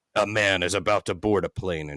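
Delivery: deep, dramatic, portentous narrator voice. Recalling Time Life Mysteries of the Unknown commercials: Rod Serling-esque narration. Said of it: "in a deep, almost Rod Serling esque intonation".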